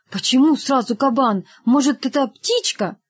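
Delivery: plain reading voice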